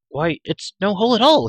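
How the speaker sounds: very loud, high crying out. Terran answers Elenry's question from below the ledge, crying out. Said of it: "he cried".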